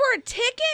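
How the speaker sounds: very high, high-pitched startled yell. Host hearing one ticket cost over forty-seven thousand dollars, yelling. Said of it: "I didn't mean to yell".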